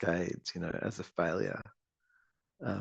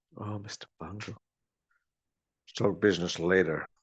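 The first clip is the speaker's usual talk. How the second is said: sleazy, predatory, charming male voice. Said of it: "predatory male voice".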